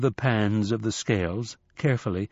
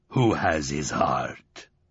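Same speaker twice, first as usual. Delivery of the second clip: very low, menacing growl from deep down; 8 semitones lower than usual. A narrator voicing Anubis in the story, Anubis growling. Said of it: "growled Anubis".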